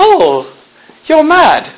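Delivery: high-pitched put-on British accent. Telling an audience how your wife talked when you first met her, imitating a british accent. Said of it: "she talked like she was British".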